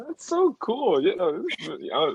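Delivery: high-pitched, stammering, halting false start. Telling a guest how cool their program is, stuttering. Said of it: "I'm sorry for all the stuttering".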